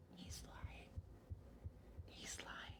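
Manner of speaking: very quiet, hushed, breathy whisper. Cutting in on someone's account, whispering.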